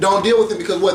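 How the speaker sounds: normal talking voice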